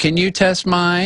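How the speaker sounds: put-on tiny, high, slow little old lady voice. Retelling an old lady walking up at a drink check, little old lady voice. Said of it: "this old little old lady voice".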